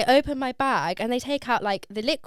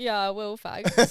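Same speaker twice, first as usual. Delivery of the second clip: mock-tearful, as if in tears; 2 semitones lower, 4 dB quieter than usual. Retelling the speaker's own reply to airport staff, imitating being in tears. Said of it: "I was just there in floods of tears".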